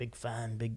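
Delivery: imitated Irish accent. Retelling a fan who spoke to him last night: imitating an Irish accent. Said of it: "like, an Irish accent last night".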